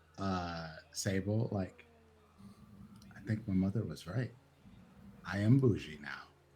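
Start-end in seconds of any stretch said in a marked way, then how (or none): 3.2-6.3 muttered, hushed half-whisper under the breath. Voicing a character speaking under his breath to another: half-whispering under his breath. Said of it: "under his breath, he sort of whispers".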